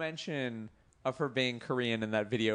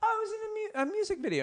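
very high-pitched, halting mom voice. Retelling his mom's visit home, imitating his mom. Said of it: "you're doing an impression of your mom".

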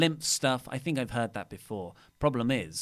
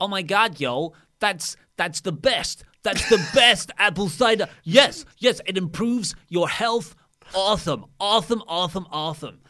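put-on woman's voice, much higher and louder; 8 semitones higher, 9 dB louder than usual. Retelling how she walked in and saw the bottle on your desk, do a SoCal Val impression. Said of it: "It's a perfect impression".

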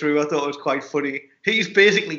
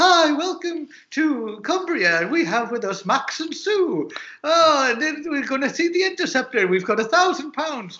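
shrill, piercing, very high presenter voice; 11 semitones higher than usual. Imitating the TV presenter Annabel Croft: imitating a shrill, piercing voice. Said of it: "most shrill, piercing voice I've ever heard".

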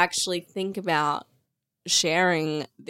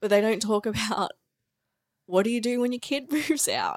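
tearful speech, sobbing while talking; 4 semitones higher than usual. A podcast host speaking while bawling their eyes out: crying. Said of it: "I'm literally bawling my eyes out".

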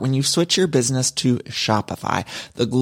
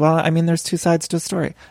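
imitated, much higher-pitched muttering; 3 semitones higher than usual. Discussing Selling Sunset, imitating a cast member: imitating Davina muttering. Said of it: "muttering under her breath".

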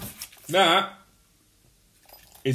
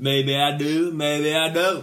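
put-on, laid-on lazy Texan drawl. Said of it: "he was like McConaughey".

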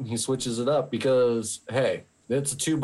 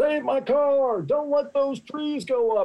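mock, very high-pitched yelling; 13 semitones higher than usual. Retelling the dad in the cop car yelling at the fireman: imitating someone yelling. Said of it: "yelling a-, at the fireman".

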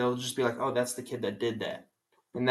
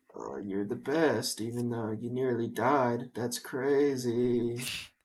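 mock flat, emotionless deadpan delivery. Imitating a husband who shows no emotion: imitating flat emotionless delivery. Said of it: "had no emotion".

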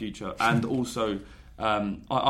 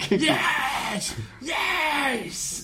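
put-on very high, shrill, ecstatic, celebratory scream. Recounting his reaction to a late equalizer, re-enacting his own scream. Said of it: "I'm screaming".

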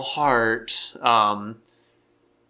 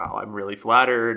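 plain

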